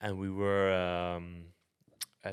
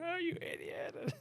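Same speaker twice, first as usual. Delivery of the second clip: very high, slow screaming. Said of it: "she came after me, like, screaming".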